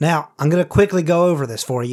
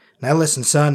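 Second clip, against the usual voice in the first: somewhat gruff, tough character voice. A voice actor recalls a character's line, a little gruff and tough. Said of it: "he was a little more gruff and tough".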